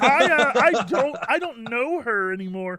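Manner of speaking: high-pitched cartoon frog puppet voice. Joking about what a character would say: imitating Kermit the Frog. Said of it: "Kermit's like".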